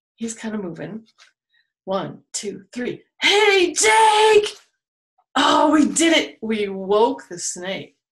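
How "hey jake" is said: very high, loud shout with a drawn-out name. Counting to three, then yelling with viewers to wake the snake: yelling to wake a snake. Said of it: "Let's do it again".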